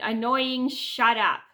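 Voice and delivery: loud, annoyed, fed-up, irritated snap. Retelling telling a teasing girl on Zoom to shut up: imitating own irritated snap. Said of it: "I start to get so irritated that I go".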